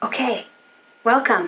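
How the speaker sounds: whispered speech. Welcoming listeners while wearing headphones on both ears, whispering. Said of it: "I don't know why I'm whispering".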